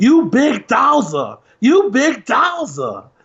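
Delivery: very slow, drawn-out sing-song taunt. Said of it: "you sound like [name] uh, on uh, Ali right there when you say it like that".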